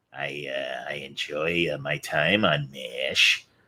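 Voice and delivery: put-on very slow, drawn-out old-timer voice. Doing an impression of Jamie Farr as old Klinger. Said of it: "But I like doing old Klinger".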